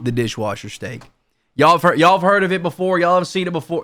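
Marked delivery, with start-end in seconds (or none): 0.0-1.0 completely level monotone with no inflection at all. Mimicking a man presenting a steak recipe; completely monotone, no inflection. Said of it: "just no inflection in his voice, completely monotone".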